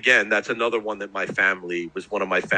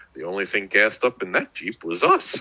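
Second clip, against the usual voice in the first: put-on boozy, drunk-sounding voice. Retelling a favorite scene, the speaker imitates BJ's drunken voice. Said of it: "BJ goes in that drunken voice".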